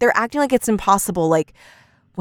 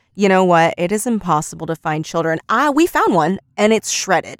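ordinary talk, nothing marked

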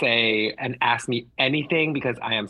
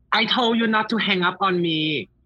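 menacing, threatening voice, pitched up; 8 semitones higher than usual. Acting a Scream opening phone call: acted Scream caller voice. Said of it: "call up my good friend to play opposite".

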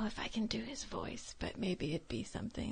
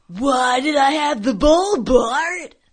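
very loud, high, nerdy cartoon boy voice; 5 semitones higher, 17 dB louder than usual. Asked who else they can impersonate, doing a Milhouse impression. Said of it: "I could do Milhouse".

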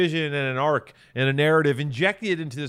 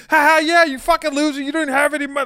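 very high, squeaky, prettied-up, dressed-up voice; 12 semitones higher, 7 dB louder than usual. Showing how the other speaker dresses up insults: Maddie voice. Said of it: "in this bullshit Maddie fucking voice".

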